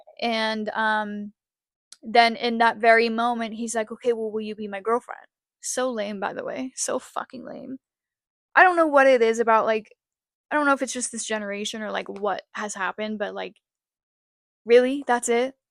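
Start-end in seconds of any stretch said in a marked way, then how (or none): 3.9-5.3 put-on angry, irritated, annoyed delivery. Retelling how a partner asked after he got mad: imitating him asking angrily. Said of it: "he got all mad about it".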